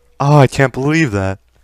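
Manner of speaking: loud, strained, frantic yelling in a panic.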